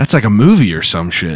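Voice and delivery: plain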